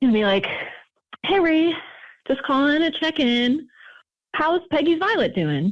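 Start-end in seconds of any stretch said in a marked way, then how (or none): 1.2-5.7 casual, higher-pitched motherly voice. Playing the mom in an acted-out phone call, imitating the mom. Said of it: "Just try to actually how your mom sounds".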